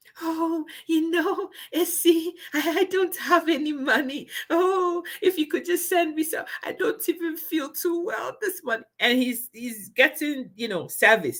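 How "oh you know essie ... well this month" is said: pitiful, feeble, fake-sick failing voice, pitched higher. Mocking a man on the phone to a woman, mimicking his losing-voice act. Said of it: "It sounds like I'm losing my voice".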